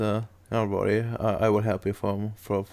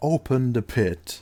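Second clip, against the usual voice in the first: louder, higher, slower shout; 3 semitones higher, 3 dB louder than usual. The game master voices a figure ordering soldiers, giving a shouted command. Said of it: "he like inhales and shouts".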